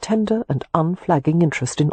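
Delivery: plain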